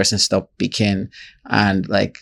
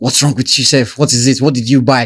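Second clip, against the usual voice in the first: loud, raised yell; 4 semitones higher, 5 dB louder than usual. Retelling how a customer service worker spoke to a customer: imitating someone yelling. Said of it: "customer service was yelling at a customer".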